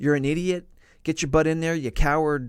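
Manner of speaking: put-on fierce, mean commanding officer voice. Retelling how an officer sounded during training: imitating a mean, fierce voice. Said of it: "this mean, fierce".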